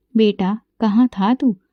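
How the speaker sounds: plain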